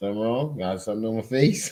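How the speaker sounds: ordinary delivery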